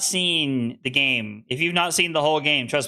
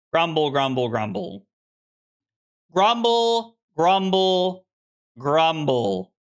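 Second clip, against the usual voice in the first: usual speaking voice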